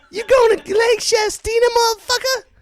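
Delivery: very high, loud, sassy woman's voice.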